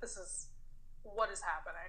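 mock annoyed tone. Speaker retells the listener's reaction while they were driving, mock-annoyed retelling. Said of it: "you were still pissed".

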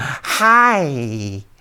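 high, wobbling, buzzing fly voice, drawn out. Speaker explains raising pitch and pinching chin flesh: high buzzy fly voice on 'hi'. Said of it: "I raise my pitch and I wiggle. Pinch a little bit of flesh underneath my chin".

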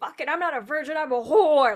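loud, high-pitched scream. Retelling a birthday phone call in Times Square, the speaker re-enacts screaming. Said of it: "I just started screaming".

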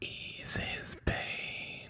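creepy whisper. Speaker addresses an audience, in a creepy whisper. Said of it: "the last creepy whisper".

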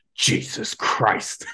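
mock under-breath mutter. Retelling a store visit, the speaker acts out a man's remark: imitating an under-breath mutter. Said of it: "under his breath, he goes".

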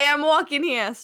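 exaggerated, put-on New York accent. Joking about a man's strong accent, mimicking him: super new york accent. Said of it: "That's like super New York".

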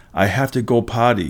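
ordinary delivery

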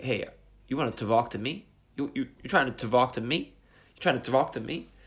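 put-on New York accent. Explaining a mnemonic for a word, acting it out in a new york accent. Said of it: "based on the New York accent".

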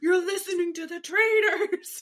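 mock furious half-yelled outburst, high and angry. Recapping a game where Burgalish got angry out of nowhere, imitating Burgalish yelling. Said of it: "He's just yelling".

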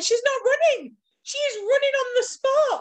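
put-on, high-pitched yelling. Recalling watching a breakaway on TV, retelling screaming at the TV. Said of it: "I screamed at the TV".

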